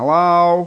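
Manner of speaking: high, effeminate, parrot-like copied voice. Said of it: "this parrot would mimic his voice exactly".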